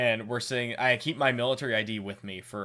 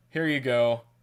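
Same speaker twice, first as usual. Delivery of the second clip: deflated, utterly let-down, disappointed tone; 3 dB louder than usual. Retelling someone handing back scanned passports: imitating a disappointed voice. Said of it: "the most disappointing, like, sounding voice".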